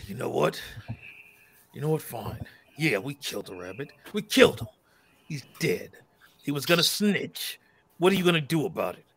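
deep guttural growling voice. Retelling a game character who has suddenly had enough: deep guttural growl. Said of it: "Almost like he sounded when he was a werewolf".

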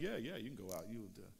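mock dry, sarcastic go-along voice. Retelling a prophet answering the king: sarcastic Micaiah voice. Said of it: "Micaiah's being sarcastic".

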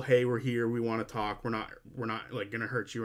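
ordinary talk

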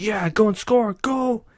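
high, really pumped-up cheering.

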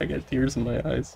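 laughing hard to the point of tears.

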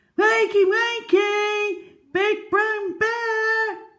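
very high, drawn-out, slow calling out. Narrator reads a squirrel trying to wake her sleeping friend, calling out. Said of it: "she called".

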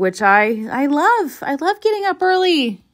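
sarcastic, sing-song. Tell your listeners about getting up early for the launch, sarcastic. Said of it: "I'm being sarcastic".

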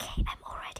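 very quiet, breathy, barely-there whisper. Sneaking out to meet friends while mom is sleeping, whispering. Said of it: "I have to whisper because my mom is sleeping".

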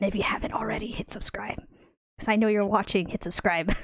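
whispering. A video host speaking to viewers; whispering.

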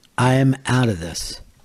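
ordinary talk

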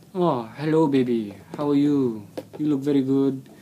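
clumsy, very bad, fake Indian accent. Mimic an Indian guy who adds people on Facebook, in a very bad Indian accent. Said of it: "That was a very bad accent".

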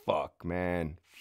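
ordinary delivery

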